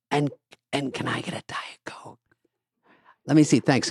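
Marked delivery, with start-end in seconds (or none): 0.1-2.2 breathy, slow whisper, drawn out softly. Retelling quiet passengers on a plane: imitating passengers whispering. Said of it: "they're whispering".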